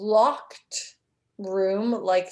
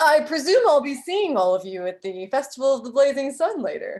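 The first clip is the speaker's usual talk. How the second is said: pompous, puffed-up, high-pitched, full-of-himself show-off voice; 5 semitones higher, 3 dB louder than usual. In a role-play scene, the speaker voices a pompous character in a Gaston voice. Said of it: "we can do a Gaston".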